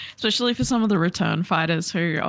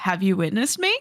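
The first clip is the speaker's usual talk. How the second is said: put-on upbeat voice. Quoting the second bit of the clip: imitating Aaron Hansen's upbeat voice. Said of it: "when he does it again and he goes".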